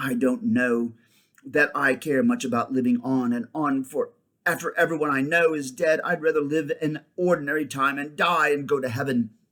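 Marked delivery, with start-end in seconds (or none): none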